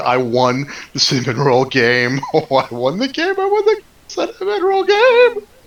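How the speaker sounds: laughing while speaking, swooping, drawn out. Voicing a character gloating over winning the cinnamon roll game: laughing at the top of his lungs. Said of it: "he starts laughing at the top of his lungs".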